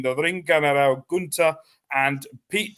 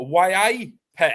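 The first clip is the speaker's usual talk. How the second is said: put-on Newcastle Geordie accent, pitched up; 5 semitones higher, 3 dB louder than usual. Talking about a team near Newcastle, trying a put-on Geordie accent. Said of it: "that's all the Geordie I know".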